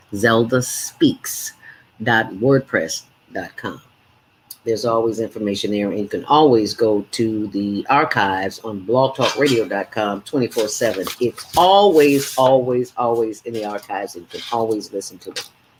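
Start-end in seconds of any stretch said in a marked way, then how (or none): 0.2-3.9 slow, careful, deliberate, words spaced out. Repeating the blog address after saying she talks too fast: slowed down deliberately. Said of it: "slow down, Zelda".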